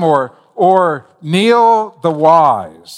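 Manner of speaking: very slow, grand, lofty pronouncement. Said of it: "Could you say that with a straight face?".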